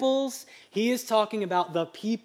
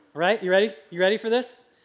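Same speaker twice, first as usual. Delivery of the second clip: usual speaking voice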